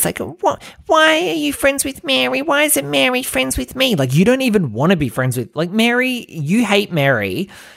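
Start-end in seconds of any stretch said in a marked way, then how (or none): 0.2-4.0 put-on tiny, very high, creaky little-girl squeak. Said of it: "little girl voice".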